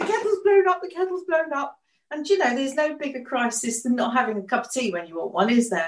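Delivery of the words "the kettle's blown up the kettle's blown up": high panicked shouting. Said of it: "I'm shouting at my husband saying".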